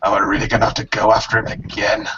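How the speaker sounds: muttered out loud to himself. Narrator voicing a character who watches another fall, mumbling out loud. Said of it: "he just mumbles out loud".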